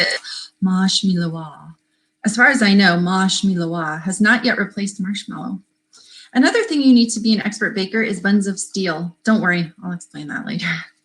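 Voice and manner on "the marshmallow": hoity-toity, very fancy upper-crust posh accent. Showing how the word marshmallow was once said: very fancy accent. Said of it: "with a very fancy accent".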